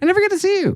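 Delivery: weird, very high-pitched, cutesy voice. Retelling what an ex-girlfriend always said: imitating a weird high-pitched cutesy voice. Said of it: "she would do this high-pitched weird thing".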